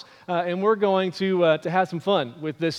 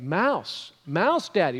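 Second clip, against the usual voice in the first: ordinary delivery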